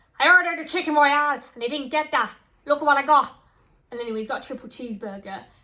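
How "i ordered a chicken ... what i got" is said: heated, raised, put-on Irish accent. Retelling a customer's heated complaint to a McDonald's worker, imitating a raised, accented voice. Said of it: "she got a good good accent".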